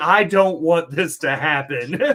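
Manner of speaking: loud, emphatic, insistent delivery. Retelling how Tommy protested loudly: imitating someone protesting. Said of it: "he's making a point to be like".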